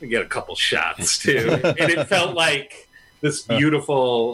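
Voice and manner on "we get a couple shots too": mock muttering under breath, lower pitch. Retelling what John said at the bar, imitating John muttering under his breath. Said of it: "under his breath".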